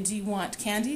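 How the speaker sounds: plain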